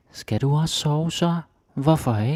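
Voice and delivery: put-on high, childlike small child's voice. Explaining how kids speak danish differently, the speaker demonstrates a higher child voice tonality. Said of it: "like a higher uh, voice tonality".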